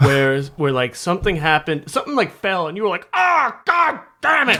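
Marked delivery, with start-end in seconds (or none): 3.1-4.6 put-on, very slow, loud, drawn-out bellow. Recalling something falling, the speaker acts out the listener's reaction: retelling a really loud yell. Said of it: "Like really loud".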